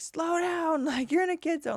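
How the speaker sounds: mock angry scolding yell, high and loud. Parent retelling yelling at a driver speeding through a school zone, retelling an angry yell. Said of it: "I yelled pretty loudly, pretty angrily".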